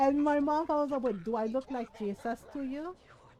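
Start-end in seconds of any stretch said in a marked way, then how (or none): none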